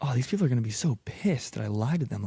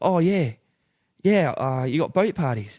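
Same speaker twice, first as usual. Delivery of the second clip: fake Australian accent throughout, pitched high; 5 semitones higher than usual. Retelling asking some guys for boat work while stuck keeping up a fake accent. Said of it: "what's your accent from?".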